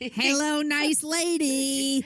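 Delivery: very high, drawn-out lady voice, going way up. Greeting the other podcaster playfully: Jerry Lewis impression. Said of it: "that's my Jerry Lewis impression".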